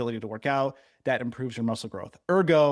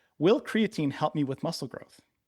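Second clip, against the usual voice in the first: ordinary talk, nothing marked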